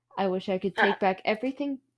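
ordinary talk, nothing marked

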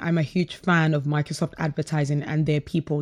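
ordinary talk

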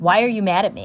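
ordinary talk, nothing marked

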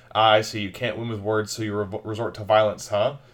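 normal talking voice

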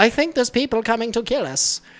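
very high-pitched cartoon-style villain voice. Quoting a movie character who talks like Frieza: Frieza voice. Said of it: "she talks like Frieza from Dragon Ball Z".

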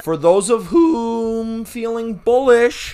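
cracking voice. Announcing picks for bettors feeling bullish, voice cracking. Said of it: "this is a voice crack".

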